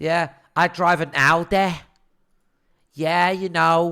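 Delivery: put-on Manchester accent with words dragged out. Retelling what a girl at the gym said: imitating a Mancunian accent. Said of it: "she's got that disgusting Mancunian accent".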